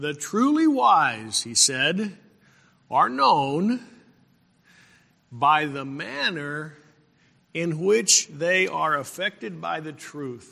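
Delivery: slow, deliberate, each word drawn out. Repeating a quoted saying so listeners can digest it, said slowly. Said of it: "Let me say that slowly".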